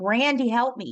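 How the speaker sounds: put-on mild, urgent calling-out voice. Retelling calling for help after nearly passing out: retelling a past yell.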